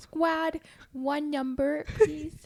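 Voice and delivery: awkward put-on high, loud little-kid voice. Retelling how they've been talking at work lately, sounding like a five-year-old. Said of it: "who hired this five-year-old?".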